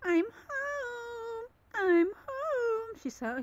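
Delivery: sweet little cat voice, very high and very slow. Comparing two voices, imitating how Smokey says it: cute Smokey voice. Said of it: "Smokey sounds more cute, like".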